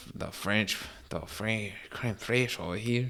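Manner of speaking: hushed, soft put-on Mexican accent, half under breath. Speaker slips into a mexican accent without meaning to. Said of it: "I don't know why I gave a Mexican accent".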